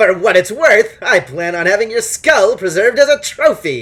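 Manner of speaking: put-on smug voice with Sicilian accent. Voicing a captive who bleats smugly at the party: voice of the Sicilian from Princess Bride. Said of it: "that's the mental voice that I'm applying to this dude".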